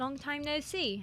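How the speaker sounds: put-on British accent. A player voices the character Delora again, Delora's British accent. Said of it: "Delora was British last time I did her".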